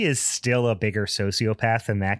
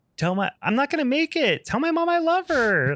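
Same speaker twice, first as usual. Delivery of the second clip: very high, flat, emotionless always-cheerful dub voice. Mocking a character's badly dubbed voice, imitating its oddly cheerful bad dub. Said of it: "that was kind of like how the voice of the dub for him was so bad".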